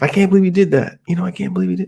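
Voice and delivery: frustrated, angry, scared disbelief. Retelling own reaction on learning friends told the girl: retelling own frustrated angry words. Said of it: "kinda frustrated and angry and scared".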